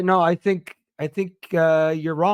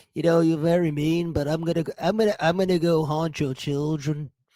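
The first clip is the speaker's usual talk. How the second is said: acted ghostly voice. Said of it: "I got [name] [name] once on the show".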